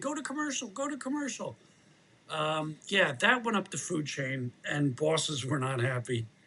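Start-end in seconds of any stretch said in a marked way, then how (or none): 0.0-1.6 acted-out high-pitched, repeated screaming. Retelling being stuck with an empty chair on air: imitating own past screaming. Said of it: "and I'm screaming".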